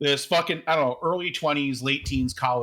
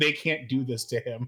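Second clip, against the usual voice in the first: put-on voice on the verge of crying. Retelling a moviegoer sitting down upset: imitating someone almost crying. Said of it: "She sat down almost crying".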